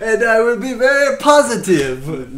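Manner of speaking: generic put-on accent leaning French. Voicing a character with a mixed accent, speaker slips into a French-sounding accent. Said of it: "That's pretty much French there".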